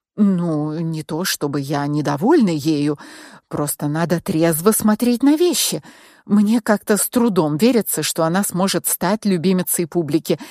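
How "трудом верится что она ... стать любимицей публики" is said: plain reading voice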